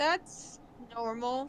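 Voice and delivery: slow, soft sarcastic tone. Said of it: "I'm using sarcasm".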